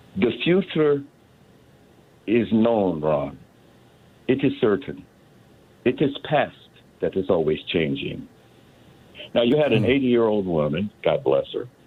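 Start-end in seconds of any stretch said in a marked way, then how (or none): 0.2-8.3 put-on accent of Transylvania. Quoting what a Romanian friend once told him: thick Transylvanian accent. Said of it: "in a very thick Transylvanian accent".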